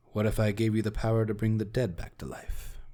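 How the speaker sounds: secretive, hushed half-aside. Voicing a character who offers a tempting deal: hushed tone. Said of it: "in a little more of a hushed tone".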